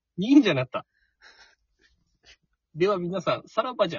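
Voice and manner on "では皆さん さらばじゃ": put-on, very slow, drawn-out delivery, chuckling through it. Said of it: "ちょっと笑いながら言うんだよね".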